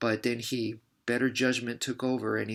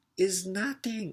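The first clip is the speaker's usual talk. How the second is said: offhand put-on Thai accent, pitched up; 9 semitones higher than usual. Retelling the Muay Thai assistant's reply to his question, fake Thai accent. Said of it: "I don't want to do a fake Thai accent".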